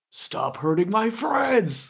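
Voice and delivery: high, fierce in-character scream. A player, in character, screams at this guy: screaming in character. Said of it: "I'm going to scream at this guy".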